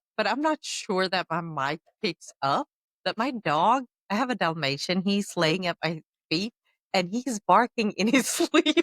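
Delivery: words bubbling with laughter throughout. Explaining why their dog at their feet set them off, laughing while talking. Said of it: "I'm sorry that I'm laughing".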